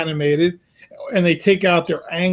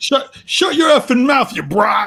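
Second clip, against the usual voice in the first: mock angry old man voice, pitched up, lashing; 7 semitones higher than usual. Joining the story of a kid at a Jets game, imitating an angry old guy. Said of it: "like, all pissed off".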